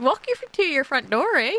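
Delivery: exaggerated put-on Canadian accent. Repeating the line as a joke: put-on Canadian accent. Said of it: "The Canadian slipped out there".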